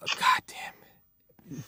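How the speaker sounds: muttered, whispered under breath.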